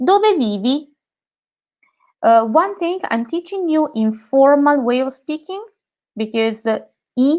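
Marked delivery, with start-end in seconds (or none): 0.0-0.9 rising, upward inflection on dove vivi. Teaching learners an italian question, say it with rising question intonation. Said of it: "Intonation goes up".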